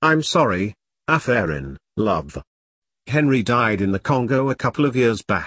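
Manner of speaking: ordinary talk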